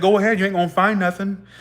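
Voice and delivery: put-on rude, dismissive tone full of attitude. Retelling the answer to an agent asking to search bags: imitating own rude reply. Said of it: "I was very rude".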